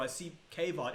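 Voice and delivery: plain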